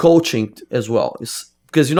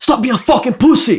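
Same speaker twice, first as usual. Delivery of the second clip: very high-pitched, tough yell; 10 semitones higher, 4 dB louder than usual. Retelling how a coach yelled during training: imitating a coach yelling. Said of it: "he yelled at me".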